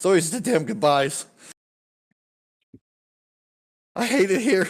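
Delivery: shrill, very high, very loud tearful sobbing wail. Narrator voicing Stan as the group says goodbye to everybody; Stan, tearful and sobbing. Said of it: "he just starts sobbing".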